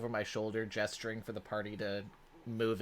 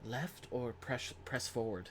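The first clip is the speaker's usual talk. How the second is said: whispering, much quieter; 6 dB quieter than usual. Roleplaying a character leaning over a companion's shoulder during a game, whispering. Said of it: "lean over my shoulder and whisper".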